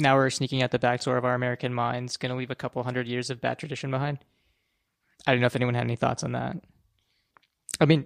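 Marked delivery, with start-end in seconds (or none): none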